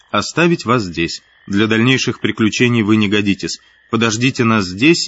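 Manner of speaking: plain reading voice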